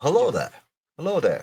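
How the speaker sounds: attempted British accent. Coaching someone on a British accent, doing an Obi-Wan Kenobi impression. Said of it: "Is that better?".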